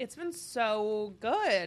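sarcastic-sounding tone. Answering a question about how dating has been going: sarcastic-sounding. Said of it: "It sounded really sarcastic".

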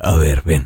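imitated thickened deep voice. Retelling a visit to the ugly pastor, imitating the pastor's thickened voice. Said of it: "se te engruesa cuando an-".

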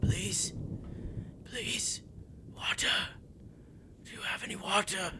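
very thin, wispy, breathy, pleading whisper. The narrator voices a man long held in a trap, turning to Parade: thin, wispy voice. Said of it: "in a very like thin, wispy voice".

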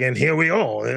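bad, terrible put-on French accent. Joking about greeting a guest the weird way: terrible French accent. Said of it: "just terrible French accent".

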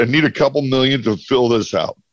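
plain

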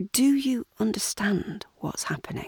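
kind, gentle, soft voice. [name], glancing at Lewis, asks Charity a question: gently. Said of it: "asks Charity gently".

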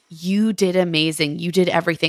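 condescending, patronizing tone. Quoting a man's words to his partner about therapy: imitating a condescending tone. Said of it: "That is so condescending".

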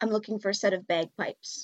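very low, hushed, secretive conspiratorial murmur. Character glancing around in case anybody's listening, speaking in very low tones. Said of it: "in very low tones say".

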